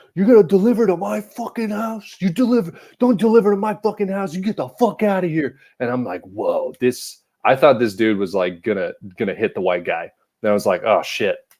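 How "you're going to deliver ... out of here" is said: shrill, very high screaming rant. Retelling a story about a guy screaming at a couple, imitating a man screaming. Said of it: "The guy screaming at the couple is like".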